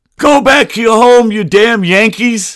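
mock loud, shrill, very high child's holler, taunting. Recalling leaning out a window at ten years old, retelling a yell. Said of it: "yelling at them to go home".

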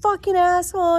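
high-pitched scream. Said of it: "I'm screaming".

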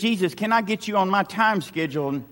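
plain

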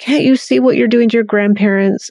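play-acted, rushed, shaming scolding outburst. A mother acts out what she used to say to her child; retelling own yelling. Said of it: "I'm yelling and I'm screaming".

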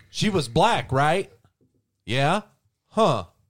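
put-on hillbilly accent. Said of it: "Why did he suddenly become a hillbilly?".

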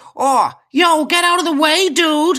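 cheeky put-on American accent, very high and slow. Retelling a cheeky little boy cycling toward him, imitating kid's American accent. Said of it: "he says in his inexplicably American accent".

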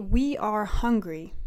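normal talking voice

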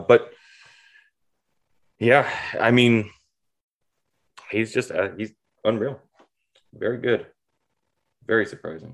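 disappointed, let-down tone. Speaker finishing a point in a sports discussion, disappointed tone. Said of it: "you said that with such just disappointment".

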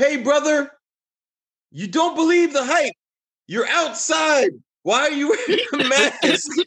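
very high-pitched, shrill yelling. Retelling a driver at a red light yelling at a couple: imitating a man yelling. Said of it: "he started yelling at them, like".

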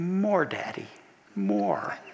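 tiny, soft, distant-sounding hushed voice. Retelling a story of a daughter asking her dad for more: imitating a soft little voice. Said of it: "he heard the soft little voice say".

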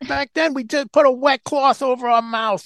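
put-on very high-pitched voice with old-school Bronx accent. Recalling an old bronx firefighter's stories, imitating his bronx accent. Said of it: "listening to him with his accent".

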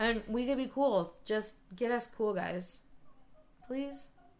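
wheedling, begging, pleading tone. Asking the other speaker for a home recording studio: begging. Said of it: "That sounded a bit like begging".

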